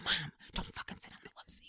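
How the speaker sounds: put-on whisper. Retelling a warning to mom in a house of other people: imitating a whisper. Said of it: "we're whispering because we're in a house".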